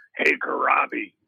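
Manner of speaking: put-on gruff little voice. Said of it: "in his gruff little voice".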